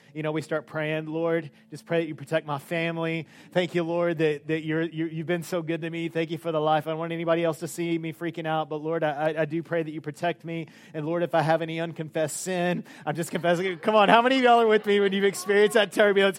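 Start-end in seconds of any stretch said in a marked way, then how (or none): none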